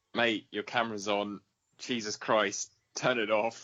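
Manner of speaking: usual speaking voice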